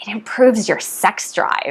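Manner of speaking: quiet, hushed voice. Sharing a meditation benefit after asking listeners to lean in: said quietly. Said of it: "I'm not gonna say it very loud".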